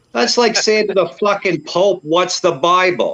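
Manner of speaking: very angry, indignant, high-pitched outburst. Speaker recalling a meeting question, said very angrily. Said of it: "And I say that very".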